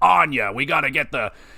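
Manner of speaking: tough, gruff military soldier voice. Speaker recalls a running joke from a game; Marcus Fenix impression. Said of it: "I hope that sounds like a pretty good Marcus".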